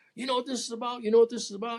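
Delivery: high, yelled, aggressive mock scream. Recounting his arrest, he acts out a fed agent in his face, imitating a screaming agent. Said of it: "the fed agents is screaming in my face".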